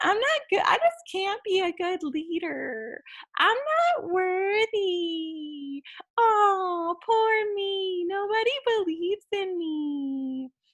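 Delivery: very high, weepy, crying, self-pitying crybaby whine. Showing the audience how annoying self-pity sounds, in a whiny crybaby voice. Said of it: "you just sound like a crybaby".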